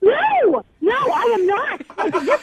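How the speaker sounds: pissed-off angry voice. Tara, who must throw out her couch, answers a question: furious. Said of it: "I'm so pissed off".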